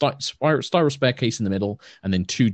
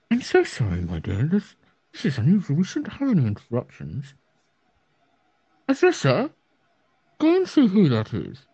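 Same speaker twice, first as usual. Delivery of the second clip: muffled speech, as from behind a door; 7 semitones higher than usual. Game master voicing someone behind a door after a knock, in a muffled voice. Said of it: "you just hear a very muffled sort of like".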